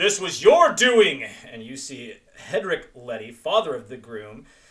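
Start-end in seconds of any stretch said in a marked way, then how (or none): 0.0-1.2 very loud, strong, booming, raised-pitch shout. A narrator voices a human calling out after a beheading, in a strong booming voice. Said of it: "a strong, booming human voice booms out".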